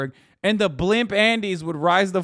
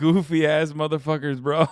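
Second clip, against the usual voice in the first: plain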